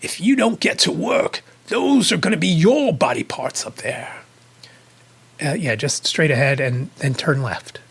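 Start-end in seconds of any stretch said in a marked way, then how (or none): 0.0-4.1 put-on, clear English accent. Retelling a man's line about body parts on the wall; english accent. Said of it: "he did this in his English accent".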